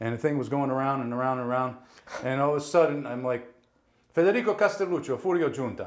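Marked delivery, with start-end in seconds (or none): 4.1-5.9 put-on pitched-up Italian accent. Announcing his name and character name in turn, in Furio Giunta's accent. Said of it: "with the accent".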